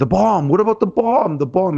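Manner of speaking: play-acted screaming outcry, high-pitched. Recounting how chat reacted, imitating chat screaming. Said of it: "Chat started screaming".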